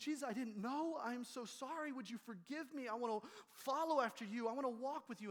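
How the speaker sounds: high, tearful voice, weeping through crying. Speaker recalls going to the end of the pew as a child, retelling a tearful prayer. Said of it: "just weeping and going".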